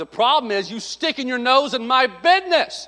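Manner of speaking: curt, snappish tone. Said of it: "That's what I wanted to say".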